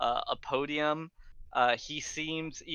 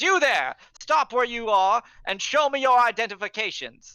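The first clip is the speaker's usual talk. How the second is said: very loud, high-pitched barked shout; 10 semitones higher, 10 dB louder than usual. Narrator voicing a city guard halting the approaching party, shouting. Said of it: "and he shouts".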